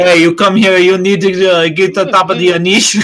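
put-on New York accent. Players take turns attempting New York accents; attempted New York accent. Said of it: "That's more New York".

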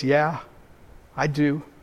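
hushed, soft, trembling voice. Recalling his answer when asked if he trusts god, retelling a trembling answer. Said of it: "I have to say with a trembling voice".

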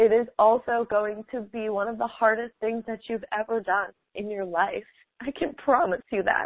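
emotional, moved, earnest voice full of feeling. Speaker talking to listeners, admitting they're getting emotional, getting emotional. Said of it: "I'm getting emotional here".

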